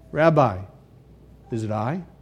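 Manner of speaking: put-on sly, smug voice. Picturing a disciple leaning over to ask the Rabbi, acting out sly smugness. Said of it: "Almost slyly and smugly".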